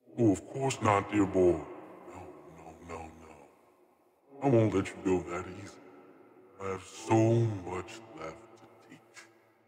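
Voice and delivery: whispering voice. A voice answering a nearly dying man inside his mind, in a whispering voice. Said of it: "the voice whispers in your mind".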